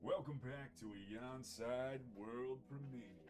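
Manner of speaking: put-on, fake deep voice. Welcoming viewers back to the stream, put-on deep voice. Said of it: "We'll put on the deep voice for y'all".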